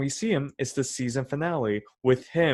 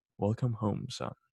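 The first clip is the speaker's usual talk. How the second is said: mock deadpan villain delivery, quieter; 3 semitones lower, 7 dB quieter than usual. Retelling a villain greeting his son in a show: imitating a deadpan villain. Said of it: "it's just him deadpan like".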